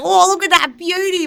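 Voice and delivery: put-on very high, loud exclamation with an Australian accent. Asked for a Florida girl, the speaker slips into a bad Steve Irwin impression. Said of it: "I just went Steve Irwin instantly".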